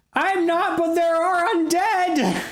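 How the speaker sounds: very high-pitched, shrill, screamed shriek. Voicing a trapped person calling to the group: screaming for help. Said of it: "why are you screaming?".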